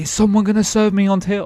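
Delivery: high, loud shouting right up close. Retelling a customer who yells in the speaker's face: imitating a customer yelling. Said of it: "He yells in my face".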